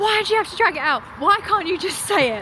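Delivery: pretend angry outburst, high, loud and fast.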